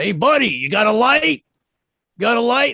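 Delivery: very high, raspy holler. Retelling a woman across the street who yelled at the speaker, imitating a raspy yell. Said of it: "This woman across the street that yelled at me".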